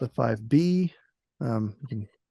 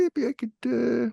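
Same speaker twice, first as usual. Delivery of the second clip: squeaky, very high, slow and halting drawl; 11 semitones higher than usual. Retelling what the artist representative offered on a factory tour: Phil impression. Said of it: "this is my Phil impression".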